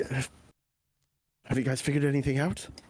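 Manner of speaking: hushed, whispered voice. Voicing a character asking Otto if they figured anything out: whispering. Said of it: "will whisper to you".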